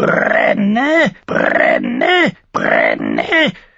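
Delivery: very low, rough, swooping raven croak. In the story, the raven cries out as the flame flickers: croaking raven voice. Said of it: "krächzte der Rabe".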